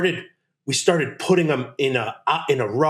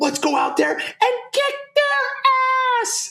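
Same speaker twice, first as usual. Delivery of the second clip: very high-pitched, shrill, screaming pep call. Retelling what Barry yelled before football games; imitating Barry's high-pitched scream. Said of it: "his voice would elevate, like high pitch".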